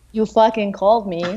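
ordinary talk, nothing marked

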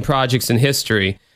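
ordinary talk

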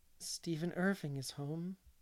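quiet, still, drained, colourless voice, sparkle gone. A woman breaks the news before she is told it, in a quiet, still voice. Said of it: "said in a quiet, still voice".

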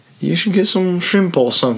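high, little fake British voice, phone assistant style. Imitating a phone telling what to eat: little fake british voice. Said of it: "a little fake British voice would tell me".

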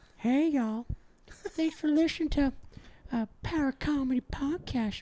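very high, pushed-up comic character voice. Imitating a cartoon character giving a podcast sign-off: Herbert the Pervert voice. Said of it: "Herbert the Pervert's like".

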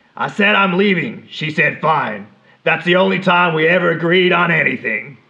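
dry put-on New Jersey accent. Asked for an accent, performing a quoted line: new jersey accent. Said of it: "Some sweet Jersey?".

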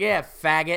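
put-on smirking tone. Retelling what a man said while smirking: imitating a smirking sneer. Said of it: "smirks and leans forward at me and is like".

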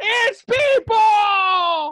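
high shrill scream with the word people drawn out. Retelling being dragged out of the room, imitating own past screaming. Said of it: "and I'm screaming".

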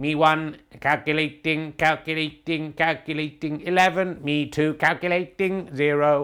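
slow, calculating computer voice. Announcing the current scores in a snooker game: robot voice. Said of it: "And computer voice there".

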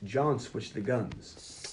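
very slow, soft, dramatic delivery.

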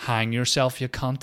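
put-on Northern Irish Belfast accent. Retelling what some guy in the dark audience said, strong Belfast accent. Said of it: "in the most Belfast accent".

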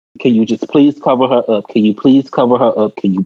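ordinary talk, nothing marked

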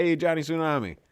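put-on New Jersey mobster accent. Retelling how a man said a name: Tony Soprano voice. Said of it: "he said it like Tony Soprano".

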